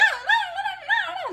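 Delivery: high-pitched, perky and bubbly tonality. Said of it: "those that you wanna be perky and bubbly".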